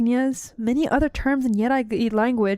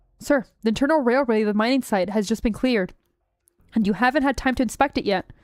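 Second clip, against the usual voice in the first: usual speaking voice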